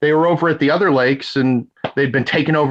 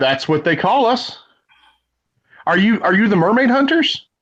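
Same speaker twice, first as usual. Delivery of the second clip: big booming voice, much higher; 6 semitones higher than usual. Playing a creature asked whether it is a fairy, big booming voice. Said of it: "a big booming voice".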